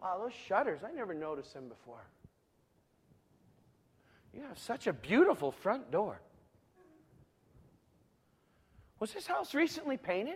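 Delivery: very quiet, low, hushed, tongue-in-cheek admiring tone. Showing what you might say standing outside a friend's door, facetious mock admiration. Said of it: "I'm being facetious".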